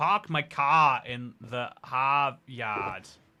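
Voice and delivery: very slow Boston accent. Chatting with a stream audience, trying out a boston accent. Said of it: "Boston accent".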